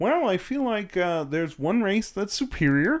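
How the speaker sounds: cartoonish frog puppet character voice. Answering a question put to Kermit in a bit, in a Kermit the Frog voice. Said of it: "No, Kermit".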